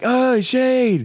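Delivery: shrill, very high, jeering yell. Retelling fans leaving a heartbreaking game: imitating people yelling at shane. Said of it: "yelling at Shane".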